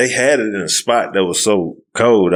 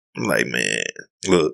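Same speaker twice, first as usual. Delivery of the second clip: ordinary delivery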